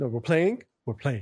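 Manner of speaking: speaking as a dog. Retelling how the dog acts, voicing the dog. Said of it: "My other dog, she just".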